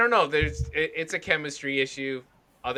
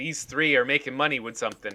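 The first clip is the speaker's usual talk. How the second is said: ordinary talk, nothing marked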